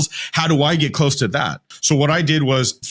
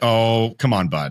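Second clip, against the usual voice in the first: slow, mock gently patronizing, mildly condescending, slightly amused; 3 semitones lower than usual. Retelling how the CEO laughed at the offer: imitating a condescending tone. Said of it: "but a little condescending".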